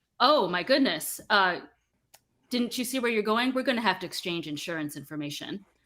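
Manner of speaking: silky, very pleasant, smooth voice. A man whose car was just dented speaks to the driver, in a lovely, smooth voice. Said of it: "he says in a very lovely, smooth voice".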